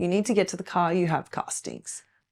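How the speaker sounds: mock broken English accent. Retelling the agency manager's phone call to the speaker: broken English, imitating the manager. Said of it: "saying to me in broken English also".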